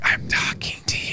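whispered voice. Retelling what a man said after coming up behind someone: whispering. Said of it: "He whispers".

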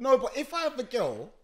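high, loud shout.

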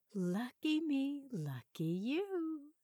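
very slow husky half-whisper, "you" drawn out. A woman speaks to a man whose family is away tonight, husky half-whisper. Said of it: "she whispered huskily".

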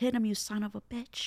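put-on half-held-back cheer. Retelling what grandpa yelled at the screen during Rocky: imitating grandpa yelling. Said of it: "in the show he yelled".

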